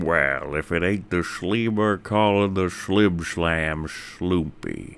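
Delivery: slow, deliberate put-on character voice. Saying a line when asked for a best Cad Bane voice: Cad Bane voice. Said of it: "in your best Chad Bane voice".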